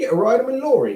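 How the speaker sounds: Australian accent. Chatting about what a lorry is, saying it in an Australian accent. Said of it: "That was an Australian accent".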